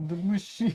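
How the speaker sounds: machine said in a sci-fi film manner. Showing how to say machine the Matrix way: Matrix-style way of saying machine. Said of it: "In the Matrixy way".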